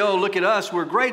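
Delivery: ordinary talk, nothing marked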